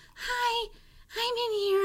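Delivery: put-on very high, very slow, drawn-out girly voice. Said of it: "your girl voice".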